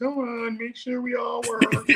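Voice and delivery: tiny, very high little-lady voice. Telling a story about a movie script, voicing the little lady in his head. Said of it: "that little lady head in my voice going".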